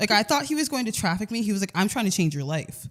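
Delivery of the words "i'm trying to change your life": put-on, low, terrifying, menacing delivery. Retelling what a delivery driver said at night: imitating a threatening voice. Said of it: "said it so, like, terrifying and threatening".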